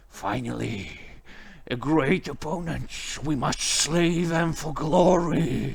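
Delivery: soft, hushed voice under the breath. Game master voicing Agrita the sword speaking to a player, half-whispering. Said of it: "And he whispers".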